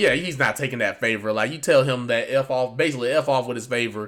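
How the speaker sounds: ordinary delivery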